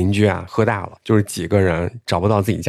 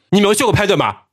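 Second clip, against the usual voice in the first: scolding tone in Henan dialect; 12 semitones higher, 4 dB louder than usual. Rebuking someone who cut in line, scolding in Henan dialect. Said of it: "用河南话直接把别人吓退".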